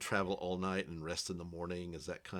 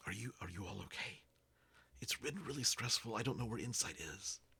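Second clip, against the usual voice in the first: hushed half-whisper throughout; 4 semitones higher, 4 dB quieter than usual. Voicing a character who checks on the group at base camp, half-whispering. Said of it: "so he's whispering the entire time".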